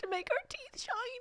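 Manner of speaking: put-on squeaky, very high Scottish child voice. Quoting little kids, little kid Scottish accent. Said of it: "little kids and little Scottish accents being like".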